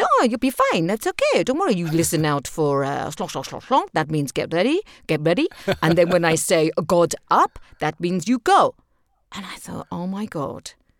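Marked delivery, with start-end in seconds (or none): 0.0-8.7 terrible fake German accent, swooping. Carla quoting what a man told her, in a bad german accent. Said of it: "this is my terrible German accent".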